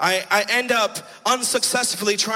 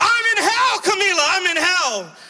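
high, frantic, panicked screaming cry; 10 semitones higher, 3 dB louder than usual. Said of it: "I'm yelling and I'm screaming".

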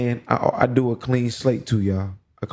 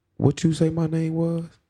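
stern, pointedly polite, pitched-up delivery; 5 semitones higher than usual. Retelling how he leaned in and asked a five-year-old: retelling a stern question. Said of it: "real stern too".

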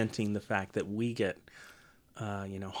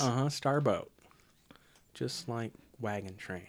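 ordinary delivery

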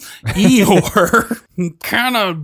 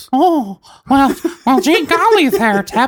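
put-on squeaky cartoon mouse voice, much higher; 8 semitones higher than usual. Asking about go-to voices, imitating Tep's go-to Mickey Mouse voice. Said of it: "Mickey Mouse is your go-to".

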